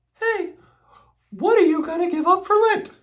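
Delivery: badly done, very high-pitched motherly voice. Recalling what his mom always asked him, speaker does a terrible impression of his mom. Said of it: "That was a terrible impression of you".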